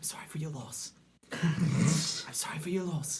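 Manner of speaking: high, soft, hushed, respectful whisper. Playing a character walking past mourners: whispering in character. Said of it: "I just whisper".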